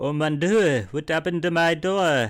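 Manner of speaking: terrible put-on French accent. Choosing to make a character French, say the line in a terrible French accent. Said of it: "You gotta do a terrible French accent".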